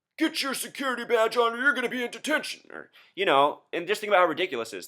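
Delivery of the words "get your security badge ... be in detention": high-pitched yell. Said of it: "the hall security would be yelling down the hall".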